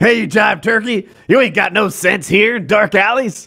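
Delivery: angry put-on voice. On a Discord call, sharing his joke quote from Airplane: put-on angry voice.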